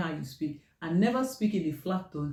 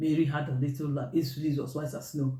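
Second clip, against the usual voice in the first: level, flat, machine-like robotic monotone; 2 semitones lower than usual. Showing a reading after the beep that comes out too flat: flat robotic monotone. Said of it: "Are you a robot? ... too flat".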